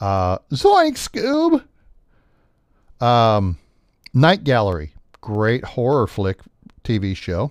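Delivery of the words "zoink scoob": poorly done cartoon voice, pitched very high. Speaker listing old TV shows tries a Scooby Doo line: bad Shaggy impression. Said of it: "I don't do a very good shaggy".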